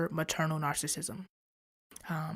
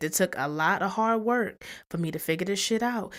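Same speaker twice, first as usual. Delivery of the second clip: normal talking voice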